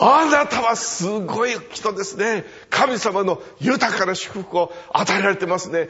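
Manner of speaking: yelling at full force, loud and high. Recounting words of blessing, the speaker delivers them shouted loudly. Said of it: "これは大声で叫んだんです。ですから本当にやってみたいんですけども".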